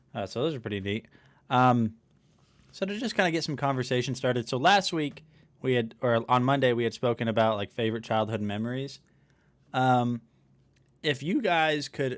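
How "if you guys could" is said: slow speech with voice breaking mid-phrase. Asking listeners a question of the day, voice cracking. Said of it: "my voice just cracked".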